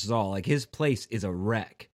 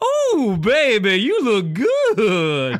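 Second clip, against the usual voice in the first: very loud, high, slow, swooping belted voice; 11 semitones higher, 9 dB louder than usual. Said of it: "That's [name]".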